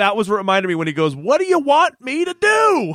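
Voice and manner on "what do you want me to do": play-acted swooping shrill scream, very high, drawn out. Recapping an episode, speaker quotes a character yelling at someone, retelling a scream. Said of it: "he's screaming at him from the houseboat".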